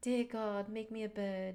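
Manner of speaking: put-on weird, strange little-girl accent. Talking about Jupiter and travel, quoting a Forrest Gump scene in Jenny's weird accent. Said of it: "I don't know why she had that weird accent".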